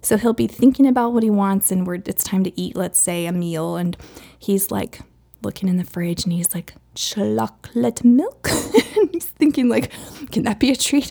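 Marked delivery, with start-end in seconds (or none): 6.9-8.5 slow, deliberate, carefully spelled-out words. Speaker retells how he names a treat while looking in the fridge: retelling slow, precise words. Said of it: "he says it very specifically and slowly like that".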